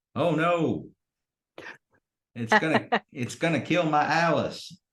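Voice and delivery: very high, loud, slow, stretched-out yell. Voicing a character as a drilling machine heads for the barracks: Clifton yelling. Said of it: "you hear Clifton yell".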